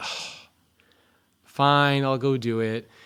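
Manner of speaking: reluctant, grudging, very slow and drawn way out. Retelling a daughter told to do chess homework: imitating reluctant daughter. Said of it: "doing it just because I told her".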